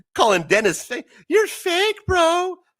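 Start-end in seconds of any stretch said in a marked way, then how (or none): 1.3-2.6 loud, shrill, very high-pitched raised voice. Mocking someone who called Dennis fake, imitating a loud, high-pitched voice. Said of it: "Voice getting all loud, high pitched".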